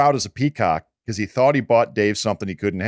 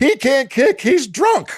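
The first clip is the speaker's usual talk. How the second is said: very high, shrill screaming; 4 dB louder than usual. Speaker retells the special teams coach coming up to the other coach, imitating a coach screaming. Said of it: "comes up screaming at him".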